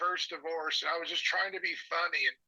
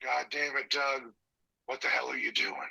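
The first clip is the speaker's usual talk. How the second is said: deep, low voice; 4 semitones lower than usual. Doing a spot-on impression of the caller, who asked for it: impression of the caller. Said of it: "you can do an impression of me that's spot on".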